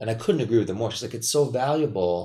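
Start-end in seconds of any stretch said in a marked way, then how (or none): 1.1-2.3 put-on Italian accent. Quoting what a woman said, imitating her Italian accent. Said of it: "in her beautiful Italian accent".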